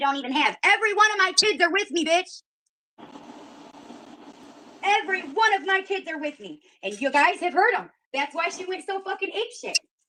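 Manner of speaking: furious shouting. Arguing with another speaker about the police and kids: angry yelling. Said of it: "Why are you yelling like that?".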